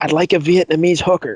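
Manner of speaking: imitated whisper. Retelling a scene where a character whispers a wish: imitating a whisper. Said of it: "he whispers in his ear".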